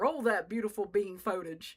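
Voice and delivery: put-on genteel, upper-class southern accent. Recalling a video, the speaker quotes a dude in an old money southern accent. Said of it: "the old money southern accent".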